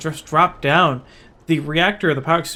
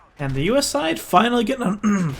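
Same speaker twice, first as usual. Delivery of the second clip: voice breaking, cracking upward mid-line; 5 semitones higher than usual. Calling the game live as the us side gets on, voice cracking. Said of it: "Not fun to see my voice crack".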